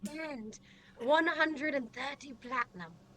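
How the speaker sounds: very slow, careful, drawn-out half-whisper. Telling the group how much money they have: half-whispering. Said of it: "I'm whispering this".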